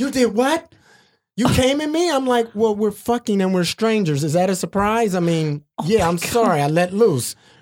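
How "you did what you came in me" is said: mock emotional, shocked, high, upset outburst. Telling a hookup story, the speaker quotes the woman's reaction, acting out her getting emotional. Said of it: "got all emotional".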